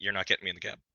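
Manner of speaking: unmoved, low, flat deadpan voice. Retelling a refusal to the rescuers: retelling a deadpan reply. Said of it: "I look 'em deadpan in the face".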